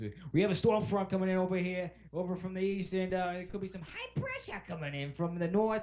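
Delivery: put-on strong, high-pitched New England accent throughout. Retelling how a man talks, in a New England accent. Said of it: "he has a very like New England uh, accent".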